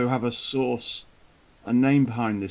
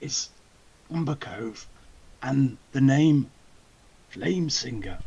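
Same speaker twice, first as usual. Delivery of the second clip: slightly lowered, confiding, confidential voice, kept close. Reporting names to the Duke, naming the most worrying, in a lowered voice. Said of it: "I've lowered my voice".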